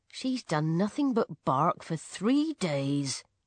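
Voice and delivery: ordinary talk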